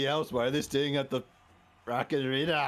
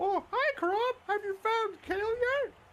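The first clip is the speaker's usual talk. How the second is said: way up high, puppet-like voice. Playing a sock puppet greeting Crop: Thistle voice. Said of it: "he just does the Thistle voice for himself".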